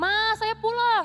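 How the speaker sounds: high, slow calling-out voice.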